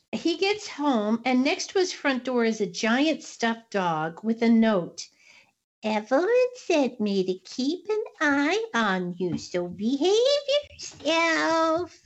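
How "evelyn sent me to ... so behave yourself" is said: eerie, creepy, swooping sing-song voice. Storyteller reads aloud a note left beside a giant stuffed dog, creepy voice. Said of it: "You got these creepy voices".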